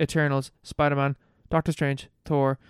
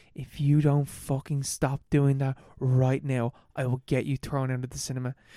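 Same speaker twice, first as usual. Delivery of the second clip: very quiet, hushed speech; 3 dB quieter than usual. Retelling a friend's warning to girls in a cinema: imitating someone speaking really quietly. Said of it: "really quiet".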